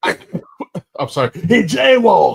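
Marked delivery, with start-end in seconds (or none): 1.3-2.4 loud, high-pitched, rough raspy voice. Joking about how the Punisher would handle a mugger: Jon Bernthal's Punisher voice. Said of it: "Bernthal's gonna be like".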